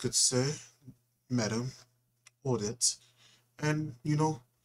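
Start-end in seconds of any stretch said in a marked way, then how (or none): 0.0-3.0 put-on eloquent, refined, formal speech. Describing how people in the northern states talk, imitating eloquent speakers. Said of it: "They talk like this".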